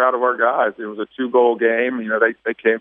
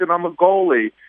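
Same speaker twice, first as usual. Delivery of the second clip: put-on high-pitched child's voice, yelling across a distance; 6 semitones higher than usual. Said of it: "He's yelling across".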